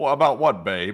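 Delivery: put-on vintage, old-time radio interviewer voice. Mocking an old radio interview: imitating the radio interviewer. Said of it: "hearing another grown man say".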